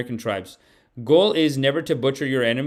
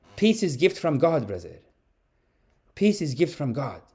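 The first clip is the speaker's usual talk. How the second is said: Arabic-accented put-on character voice. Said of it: "the character was always from like Syria".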